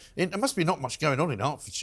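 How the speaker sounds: ordinary delivery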